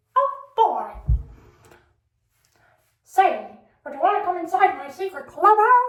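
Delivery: squeaky voice swinging up and down in pitch. Showing off a self-taught impression, Mickey Mouse impression. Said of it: "I taught myself how to do the Mickey Mouse impression".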